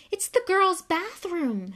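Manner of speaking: gasping, very high, loud, swooping pitch. Reading a character's line after a scream from the locked chamber: gasped. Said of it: "Harry gasped".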